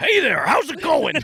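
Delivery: put-on very high, folksy Texas accent. Speaker retelling how someone thought a New Yorker sounds, imitating their put-on voice. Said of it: "went into that voice".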